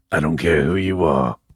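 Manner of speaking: very low, deep, hard-man movie-star voice. Quoting a movie line as a Jason Statham impression. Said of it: "That's Jason Statham".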